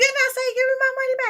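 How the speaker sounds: frantic, insistent tone at very high pitch. Retelling a phone call with an insurance representative: retelling a frantic demand. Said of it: "Like I'm frantic".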